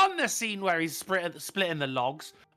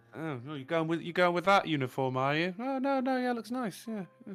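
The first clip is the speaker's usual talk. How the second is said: put-on passive-aggressive voice, quieter; 5 dB quieter than usual. Acting out a catty woman's remark to another woman: mock passive-aggressive tone. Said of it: "That sounded so passive aggressive".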